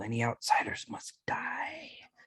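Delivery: high, whispered. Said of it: "you guys gonna have to speak up".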